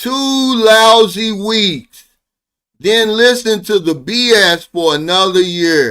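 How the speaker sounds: drawn out, every word weighed. Speaker repeats a point for emphasis, said slowly. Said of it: "Say this slow".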